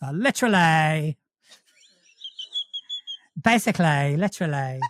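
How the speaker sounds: swooping Essex accent, -ly endings leaned on. Asked how to do an essex accent, speaker demonstrates it; essex accent, leaning on -ly. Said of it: "lean on the words that end in ly".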